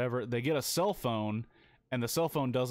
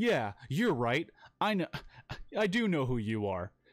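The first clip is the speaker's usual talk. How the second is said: mock hostile, combative, confrontational tone; 3 semitones higher than usual. Retelling a film scene where Adam confronts the doctor: imitating an aggressive tone. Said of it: "takes a really aggressive tone".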